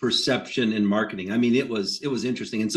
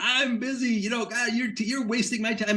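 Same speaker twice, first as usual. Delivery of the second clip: put-on yelling, screaming, higher pitch; 9 semitones higher, 4 dB quieter than usual. Retelling a seller screaming on the phone: imitating a man screaming on the phone. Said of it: "Sheldon's on the phone screaming".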